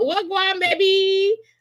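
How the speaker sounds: high, put-on Jamaican accent.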